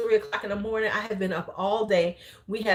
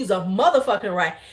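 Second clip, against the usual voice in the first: mock angry, snapping outburst; 3 dB louder than usual. Retelling ordering a man out of the house: imitating own angry outburst. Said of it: "I started snapping off".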